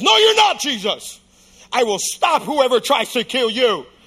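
loud, boldly declared delivery. Retelling a disciple's vow to stop anyone: imitating a loud bold declaration. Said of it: "Peter loud and boldly says".

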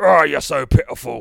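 very loud, high-pitched Cockney accent. Reading aloud, giving this guy's line in a Cockney voice from The Mighty Boosh. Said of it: "maybe we'll read him as the Cockney".

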